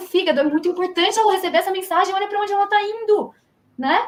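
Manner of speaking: urgent, high-pitched imploring tone. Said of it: "Ele vai falar assim, viu".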